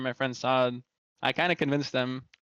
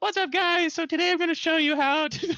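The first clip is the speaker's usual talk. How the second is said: put-on very high, squeaky kid voice; 3 dB louder than usual. Imitating own childhood Call of Duty video intros: imitating own high-pitched squeaker voice. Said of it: "highest pitched squeaker voice".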